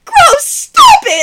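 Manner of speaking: very high, shrill, loud cracking squawk. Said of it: "And then his voice would break".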